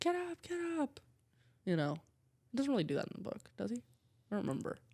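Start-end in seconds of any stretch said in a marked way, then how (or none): 0.0-1.0 mock shrill, very high screaming. Retelling a movie scene where one character screams at another: imitating a scream. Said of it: "screams at him".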